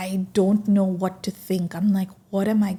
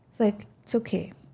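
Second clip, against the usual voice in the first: ordinary talk, nothing marked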